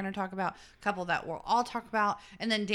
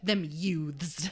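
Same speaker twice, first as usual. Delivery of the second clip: put-on pretentious voice, lower; 3 semitones lower than usual. Speaker telling the others how a favorite character says certain words: imitating Schmidt's pretentious pronunciation. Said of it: "he says".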